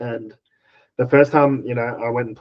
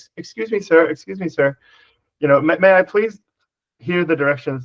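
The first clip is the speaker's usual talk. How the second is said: put-on, pitched-up, very polite, deferential, courteous tone; 6 semitones higher, 4 dB louder than usual. Retelling a friend asking for directions from a car window: imitating a very polite request. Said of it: "But he was so polite".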